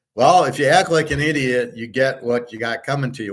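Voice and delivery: ordinary talk, nothing marked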